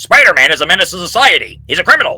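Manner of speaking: very loud, high-pitched, hard shouted outburst. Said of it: "J. Jonah Jameson, he's like".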